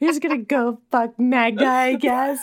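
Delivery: drunken, taunting tone in a put-on voice. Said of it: "makes some drunken comment".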